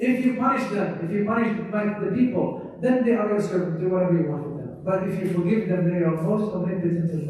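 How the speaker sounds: usual speaking voice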